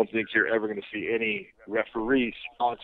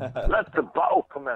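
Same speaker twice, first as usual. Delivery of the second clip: put-on British accent, pitched up; 5 semitones higher than usual. Trying out a suggested catchphrase after being asked: British accent. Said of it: "And a British accent wouldn't hurt either".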